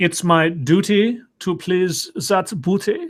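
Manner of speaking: vague continental European accent. Joking about how a line would sound in German, in a put-on Eurotrash accent. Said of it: "I love my Eurotrash accent".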